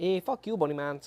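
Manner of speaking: fake Canadian accent. Imagining how a canadian man sounds, the speaker does a mock canadian accent. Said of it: "I just wanted to do that accent".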